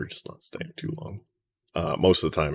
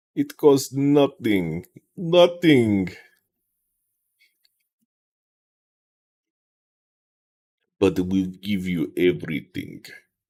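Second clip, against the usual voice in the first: slow, swooping, terrible put-on Russian accent; 4 semitones higher, 4 dB louder than usual. Doing a bit in a terrible Russian accent. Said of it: "I'm just doing a terrible Russian accent".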